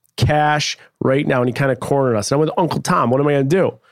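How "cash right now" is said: mock hard, stern and insistent. Retelling a man demanding cash for missing tickets: imitating a sterner voice. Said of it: "his voice got sterner".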